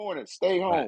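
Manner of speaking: play-acted very high, raspy, rough screaming yell. Retelling screaming at the tv during the play: retelling a scream. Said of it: "I was screaming at the T V".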